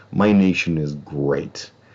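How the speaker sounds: slow, dry, mocking, sardonic irony. Repeating a survey statement to show how it was read: sardonic tone. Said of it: "I said it with a sardonic, you know, greatness".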